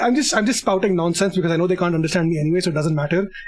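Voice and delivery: ordinary talk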